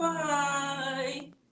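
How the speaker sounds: very slow, high, long drawn-out goodbye. Leading a goodbye rhyme with the group: very slow goodbye. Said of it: "say goodbye as slow as we can".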